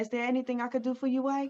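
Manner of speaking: mock smooth, quiet voice. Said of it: "if I really wanna play and fuck with his mind".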